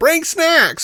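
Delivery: mock, very high, shrill yelled-out quip. Retelling a character yelling as the shuttle crashes: imitating someone yelling. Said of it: "yelling out this stupid thing".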